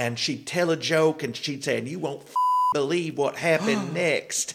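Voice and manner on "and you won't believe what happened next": thick, strong down-in-the-hills Tennessee twang. Imitating a woman from tennessee telling a joke, use a deep tennessee hills accent. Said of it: "deep accent from down in the hills".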